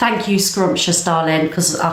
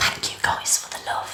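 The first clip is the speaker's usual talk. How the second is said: very quiet, barely voiced, hushed whisper. Speaker thanking the audience for the love, whispering. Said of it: "I don't know why I'm whispering".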